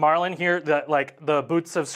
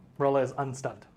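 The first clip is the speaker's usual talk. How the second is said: flat, unexcited deadpan, quieter; 5 dB quieter than usual. Announcing a game result to the players: flat, unexcited. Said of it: "Don't sound so excited".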